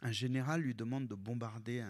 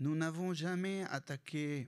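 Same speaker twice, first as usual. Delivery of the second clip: put-on Lebanese French accent spoken with a raised pitch; 6 semitones higher than usual. Quoting Phalange leader Pierre Gemayel on the war, in a typical Lebanese French accent. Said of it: "This is a typical Lebanese French accent".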